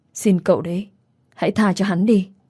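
plain reading voice

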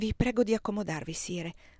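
ordinary delivery

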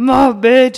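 high, loud, mock outburst.

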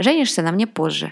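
ordinary delivery

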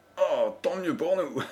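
high, mocking, sneering snicker. An engineer, just through an unguarded door with a companion, sneering. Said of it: "ricana l'ingénieur".

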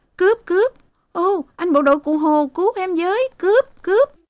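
very high, loud yelp of alarm. A girl threatened by a robber runs off, crying out for help. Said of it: "thốt lên".

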